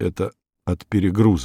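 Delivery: ordinary delivery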